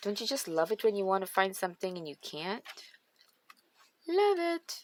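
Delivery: openly sarcastic, swooping sing-song tone. Complaining on camera about not finding something: sarcastic. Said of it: "I'm being sarcastic for sure".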